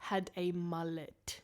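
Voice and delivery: very slow, each word stretched out. Speaker tells a co-host about a SWAT team, saying it very slowly for the crowd. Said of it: "I'm going to say this very slowly for the crowd".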